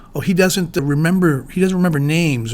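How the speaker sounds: usual speaking voice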